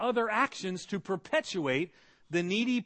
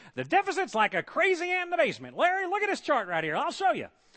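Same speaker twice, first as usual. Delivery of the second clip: high, swooping, wide-ranging talk-show voice; 8 semitones higher, 3 dB louder than usual. Doing an impression of Ross Perot talking to Larry King: Ross Perot impression. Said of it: "that's my imitation of Ross Perot right there".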